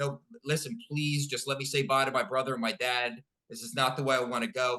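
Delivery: acted tearful, crying voice. Retelling begging a glowing being to let them say goodbye, retelling a tearful plea. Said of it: "So I start crying and I say".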